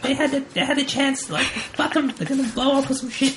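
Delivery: very high film-style lady voice. Quoting a lady from a Batman movie after an argument about sacrifice: imitating a lady from a Batman movie. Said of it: "I sound like that lady from that Batman movie".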